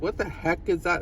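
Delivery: ordinary delivery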